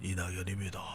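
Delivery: very quiet, thin, weak, barely audible voice. Mocking a former prime minister's voice as mosquito-like: thin, weak Lee Nak-yon impression. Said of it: "목소리가 대체로 뭐 모기 소리 비슷했어요. 죄송합니다만 이랬어요".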